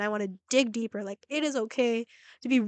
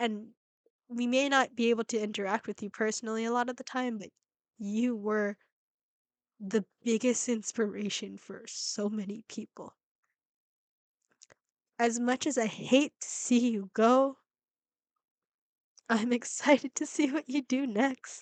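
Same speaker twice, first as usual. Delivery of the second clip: choking up, close to tears, quieter; 4 dB quieter than usual. Reacting to a farewell video and thanking the departing creator: close to tears. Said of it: "I feel like I'm gonna cry".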